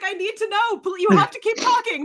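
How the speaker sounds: mock eager pleading, high.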